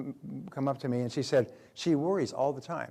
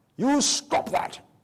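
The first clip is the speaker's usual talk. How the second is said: put-on very high and loud British accent; 12 semitones higher, 7 dB louder than usual. Quoting what the speaker's british father always said to them: british accent. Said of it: "with his British accent".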